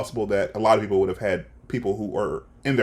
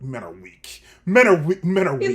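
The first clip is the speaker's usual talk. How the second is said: sour, bitter, high-pitched, resentful disdain; 5 semitones higher, 4 dB louder than usual. Retelling the Fellowship flashback, imitating Elrond's bitter tone. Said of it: "he's so bitter".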